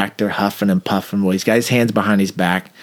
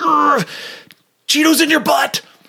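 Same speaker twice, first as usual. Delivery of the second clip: very high, frustrated, angry, furious outburst. Retelling what a frustrated, furious passenger said: imitating a furious man. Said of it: "he's so mad".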